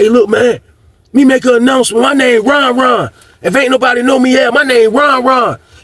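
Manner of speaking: screamed, very high, shrieking. Retelling a neighbor's announcement to everyone: imitating someone screaming. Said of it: "He screaming through the trace light".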